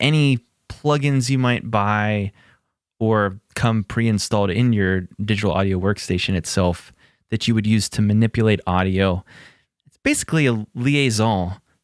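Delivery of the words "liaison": French-accented liaison between words. Explaining audio plugins: french accent on liaison. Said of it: "the French accent? ... French the N at the end for no reason? I did".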